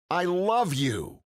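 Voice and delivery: said with real feeling. Showing how to say a phrase with emotion instead of mumbling it, said with emotion. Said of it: "Compare that with saying I love you".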